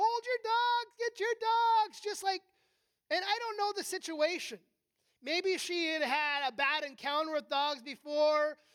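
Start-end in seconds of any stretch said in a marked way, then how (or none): 0.0-2.0 high, frantic, panicky yell, almost sobbing. Retelling a lady panicking at the speaker's dogs, imitating a panicked scream. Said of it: "she's like screaming, almost like crying".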